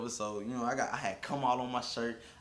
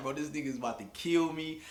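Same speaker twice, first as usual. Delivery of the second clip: put-on scared voice, higher; 4 semitones higher than usual. Retelling hiding as the father arrived: retelling own fear. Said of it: "I was scared".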